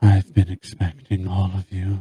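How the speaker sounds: powerful, strong, deep feminine voice. A lamia greets the party entering her hall, in a strong, deep, feminine voice. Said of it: "a strong, deep, feminine voice".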